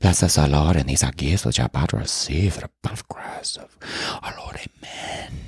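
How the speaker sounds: breathy, whispered mutter, barely voiced. Retelling how he used to say a prayer: mumbled under the breath. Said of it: "I would say it under my breath like that".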